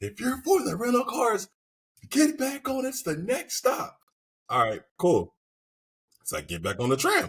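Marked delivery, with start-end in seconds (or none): 0.0-4.0 acted, very high-pitched, shrill hollered yell. Retelling a tram trip, a stranger yells at riders: imitating a man screaming. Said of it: "And this dude's like".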